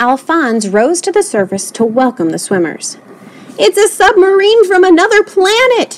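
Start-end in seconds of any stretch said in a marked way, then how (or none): 3.6-6.0 very high, loud, shrill screaming shriek. The swim coach reacts as something rises in the pool, shrieking. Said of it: "shrieked the coach".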